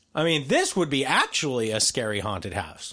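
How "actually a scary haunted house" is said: ordinary talk, nothing marked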